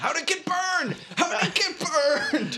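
very high, full-throated, loud yell. Retelling a movie scene of holding a burned doll up: imitating someone yelling. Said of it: "holds it in her face and yells".

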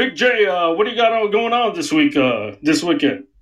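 put-on voice, offhand, halting, stumbling, full of uhs. Doing an impression of Dalton asking Big J about the weekend: Dalton impression. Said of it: "can I do an impression of, uh, Dalton?".

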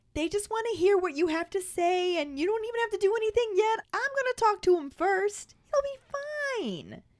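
very high, calming, soothing voice, stretched "be". Reading Hermione's reply when Harry asks what she's been telling them, in Hermione's soothing voice. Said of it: "Hermione puts on her soothing voice and says".

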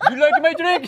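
put-on very high-pitched Eastern European accent. Voicing Mother asking about her drink, in an Eastern European accent. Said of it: "Why are you Eastern European?".

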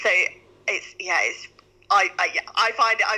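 stuttering, halting, faltering speech. Trying to describe how people react to her work: stuttering over words. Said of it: "I'm stuttering over this one".

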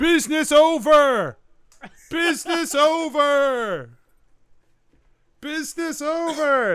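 very slow, stretched-out, loud, high drawn-out yelling. A gnoll clinging to the cart side yells back as people turn to look: yelling. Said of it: "he's just yelling".

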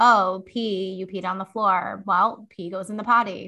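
dull, lifeless, unexcited, dismal flat monotone. Demonstrating the reaction when someone peed on the floor, flat monotone. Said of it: "just like a very dismal, like, ... Just like flat monotone".

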